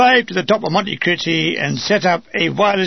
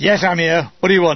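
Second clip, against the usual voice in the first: ordinary delivery, nothing marked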